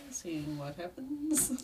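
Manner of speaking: quiet, hushed, murmured talking. Testing a new microphone: talking very quietly. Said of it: "I'm talking very quietly".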